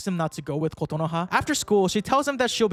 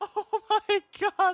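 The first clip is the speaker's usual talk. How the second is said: very high, words broken up by laughter; 14 semitones higher than usual. Reacting to a character's line while playing, laughing while talking. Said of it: "I can't stop laughing".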